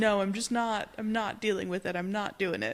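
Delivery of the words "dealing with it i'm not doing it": ordinary talk, nothing marked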